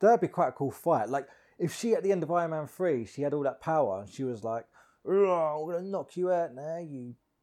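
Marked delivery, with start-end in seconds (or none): 5.1-7.1 put-on East London street accent, Hackney. Imagining her line at the end of Iron Man 3 before a fight, in a Hackney accent. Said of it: "Why does she sound like she's from Hackney?".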